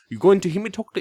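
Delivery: very high, slipped-into British accent. Previewing a one-shot set in coastal germany, in an accidental british accent. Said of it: "I just went British for a second".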